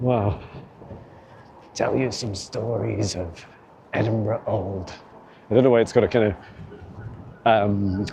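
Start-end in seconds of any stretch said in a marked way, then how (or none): 1.7-4.9 soft, quiet put-on London accent, shaded old. Looking at an old knotted tree, voicing what it says: Scrooge London accent. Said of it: "a Scrooge London accent".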